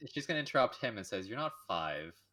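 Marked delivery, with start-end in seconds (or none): 1.3-2.1 almost contemptuous, talking-down tone. Retelling how a woman cuts him off mid-sentence, speaking with a contemptuous tone. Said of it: "from your tone of voice that she's speaking to us like almost contemptuously".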